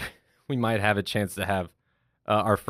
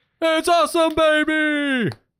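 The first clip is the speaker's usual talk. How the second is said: put-on very high, loud, with "baby" stretched out; 6 dB louder than usual. Taking a turn in a best-impersonation challenge: Dick Vitale impression. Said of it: "Best impersonation".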